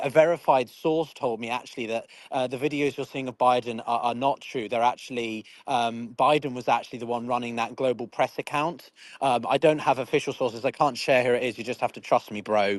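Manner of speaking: normal talking voice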